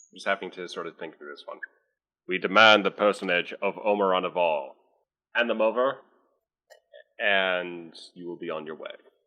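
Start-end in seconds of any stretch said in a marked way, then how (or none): 2.2-8.9 scrambled, garbled, distorted transmission-like voice. Voicing a hidden caller on a distorted view screen: distorted voice. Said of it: "It's a distorted voice saying".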